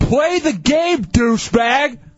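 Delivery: loud yell. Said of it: "I'm just yelling".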